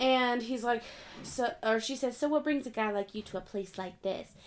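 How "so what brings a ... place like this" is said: storybook princess voice. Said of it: "she talks like a Disney princess".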